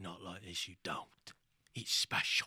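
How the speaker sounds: animated delivery with lots of inflection and pitch swings. Retelling a movie scene to the others: Willem Dafoe voice. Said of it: "You sound just like Willem Dafoe".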